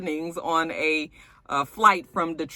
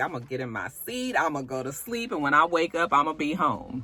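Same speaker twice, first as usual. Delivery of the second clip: ordinary delivery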